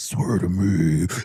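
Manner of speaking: really angry, put-on delivery.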